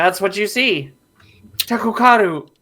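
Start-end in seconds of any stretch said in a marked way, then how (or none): 1.6-2.4 high, booming yelled cry in giant voice. The speaker voices the giant in the scene, yelling in a giant voice. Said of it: "yells Tekokaru in the voice of a in giant".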